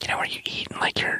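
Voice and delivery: hushed whisper, soft and breathy. Joking about doing ASMR with another speaker: whispering. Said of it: "Why are we whispering?".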